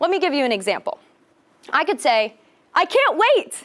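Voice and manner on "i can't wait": eager, thrilled, enthusiastic, raised and pitched up. Showing how tone of voice changes the meaning of words, excited. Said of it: "or lack thereof".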